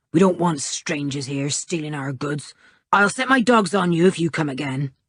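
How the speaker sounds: sudden growling voice throughout the words. Narrating a story, reading a man's words to Julian in a growling voice. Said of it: "he said suddenly in a growling voice".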